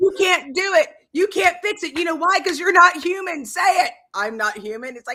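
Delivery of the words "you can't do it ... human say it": very high, shrill, furious raging yelling. Describing a man berating an AI, the speaker acts out his yelling. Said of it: "And he's like yelling at it".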